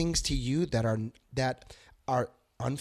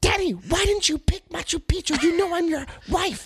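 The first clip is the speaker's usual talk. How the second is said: clumsy, badly done, very high squeaky woman's voice; 6 dB louder than usual. Imagining the wife questioning the husband's pick, bad impression of the wife. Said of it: "that's a really bad impression".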